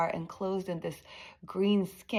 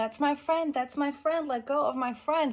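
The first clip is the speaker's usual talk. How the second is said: reenacted yell, much higher pitch; 7 semitones higher than usual. Recalling yelling at their grandpa as a child, retelling a yell. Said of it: "I started yelling at my grandpa".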